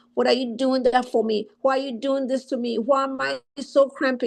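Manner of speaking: usual speaking voice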